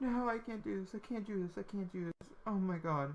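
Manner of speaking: high, tearful, weeping through the words. Reacting to a Sim's death, speaking while actually crying. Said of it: "I'm crying".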